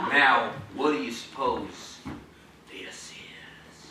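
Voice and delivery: very low, dramatic whispering. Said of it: "so I'm whispering and being dramatic".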